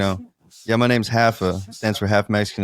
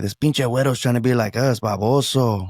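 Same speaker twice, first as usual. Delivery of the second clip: mocking, jeering, taunting kid voice. Retelling how mexican kids taunted in a stand-up bit: imitating mexican kids taunting. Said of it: "they'd be like".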